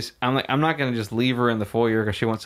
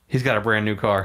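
mocking, snide, dry sarcastic jab. Retelling a date's remark from the car window: imitating a sarcastic remark. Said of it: "sarcastically goes".

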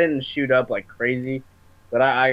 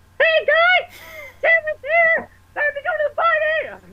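put-on annoying old voice, pitched very high; 4 dB louder than usual. Recalling old videos of yourself, imitating your old high voice. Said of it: "I used to have such a high voice".

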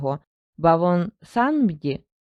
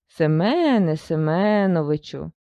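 sarcastic, ironic hiss. Death calls the host by name to remind him of his manners, ironic hiss. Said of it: "з іронією прошипіла смерть".

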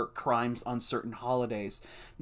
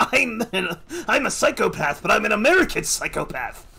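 raised, high-pitched outburst, pitch going up; 8 semitones higher, 6 dB louder than usual. Retelling a comic where the villain learns his partner is a Nazi: imitating the Joker. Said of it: "he throws a shift and he's like".

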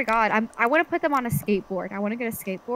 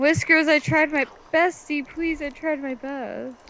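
pathetic, pitiful, begging and pleading voice; 3 semitones higher than usual. A player pleads with Whiskers after holding someone off, in a pitiful pleading voice. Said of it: "I feel bad for you when you use that kind of voice".

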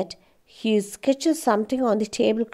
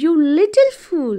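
high, loud shouting voice; 6 semitones higher, 6 dB louder than usual. Amanda shouts at the narrator again after the tablecloth burns, shouting. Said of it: "she shouted".

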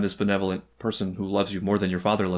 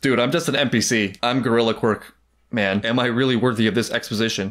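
normal talking voice

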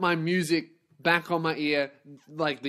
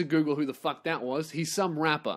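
ordinary talk

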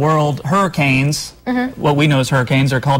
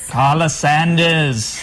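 one word said in a British accent. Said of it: "Are you going to read them in a British accent as [name] would?".

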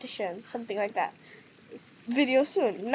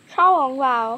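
loud, put-on Chinese accent; 2 semitones higher, 8 dB louder than usual. Speaker naming a dish while eating, in a put-on Chinese accent. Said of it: "I want to say with a Chinese accent".

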